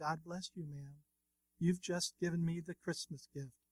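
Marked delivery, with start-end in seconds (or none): none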